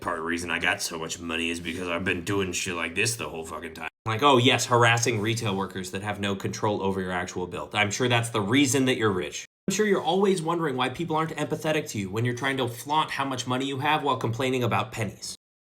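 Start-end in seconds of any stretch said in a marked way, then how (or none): 0.0-3.9 put-on low old-man grumble under the breath. Retelling a rich customer's complaint, muttering in his old-man voice. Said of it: "muttering in his old man voice".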